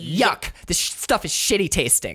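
acted-out catty, grossed-out, disgusted tone. Retelling how a woman reacted to the taste of something, mock-catty disgust. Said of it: "And she says it like so catty".

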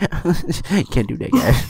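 very slow, every word drawn out. Showing the others an impression: impression of Kyle. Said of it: "my impression of Kyle is just like".

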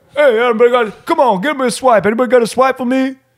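very high, loud, brash calling out. Retelling a stranger met while leaving the station today; imitating a very loud guy.

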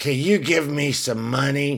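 half croaked, hoarse croaky voice. Narrating a casino story, voicing a woman asking for money, half croaked. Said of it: "she half croaked, half purred".

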